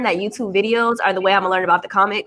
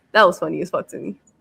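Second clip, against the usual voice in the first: ordinary talk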